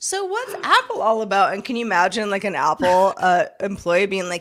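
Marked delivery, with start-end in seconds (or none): 0.0-1.5 very high, swooping, clueless sing-song voice. Speaker imagines a clueless person asking an Apple employee questions, playing a clueless person. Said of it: "just being like a clueless person being like".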